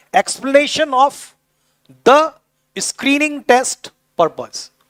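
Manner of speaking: word by word. Teaching how to read a passage by splitting it into one or two words; broken into word chunks. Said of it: "एक एक दो दो शब्द में तोड़ लीजिए उसको".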